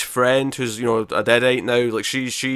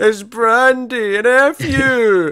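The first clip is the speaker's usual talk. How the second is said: drawn-out crying wail, very high and slow; 11 semitones higher, 5 dB louder than usual. Retelling a scene where a character starts crying: imitating a crying character. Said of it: "she just starts crying".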